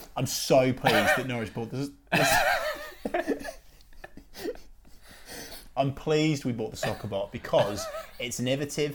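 trying not to laugh, swooping pitch. Trying to talk seriously about a club purchase: laughing while talking. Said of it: "sorry, I'm struggling".

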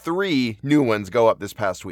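ordinary delivery

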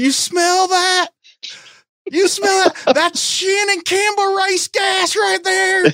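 shrill, very high-pitched hollering yell. Retelling a man doing a burnout on the ramp, retelling a yell. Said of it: "and he's yelling".

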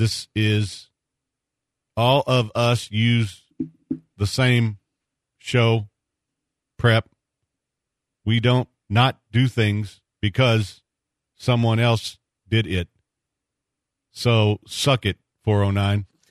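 speaking really slowly, deliberately. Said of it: "I'm gonna do it really slow".

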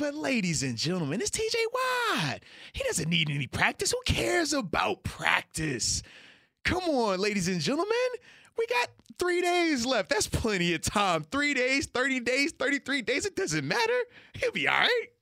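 thick sarcastic tone, high and swooping. Mocking what people kept saying about a player missing practice: sarcastic mock imitation. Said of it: "saying that in your sarcasm font".

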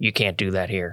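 talking real low, voice kept down. Retelling pinning a man to the side of the room, talking real low. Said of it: "I talk real low at him and I say".

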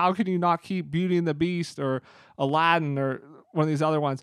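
usual speaking voice

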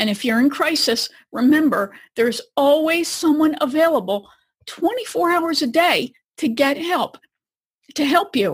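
choked-up, emotional voice catching. Host reminding listeners in crisis that help is always available: choked up. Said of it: "I get choked up just thinking about it".

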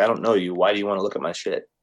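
ordinary delivery

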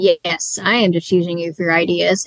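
ordinary talk

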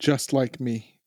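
flat, dry, expressionless deadpan delivery. In a tabletop game, a player answers the golem standing unmoving, deadpan. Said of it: "the deadpan on that delivery".

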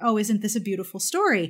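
ordinary delivery

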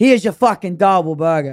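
loud, harsh, mean-sounding put-on Boston accent. Mocking a Boston accent they call harsh, in a mock-mean Good Will Hunting accent. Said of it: "It just sounds so mean".

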